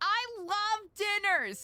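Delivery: very high, loud, shrill sarcastic enthusiasm. Retelling what someone said at a dinner: loud, mock-sarcastic delivery. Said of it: "in like a really loud and sarcastic way".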